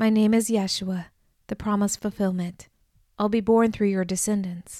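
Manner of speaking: plain reading voice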